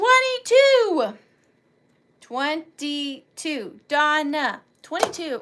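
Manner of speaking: very slow, drawn-out yell. Calling out number twenty-two at her birthday party, yelling. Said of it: "I'm yelling at twenty-two".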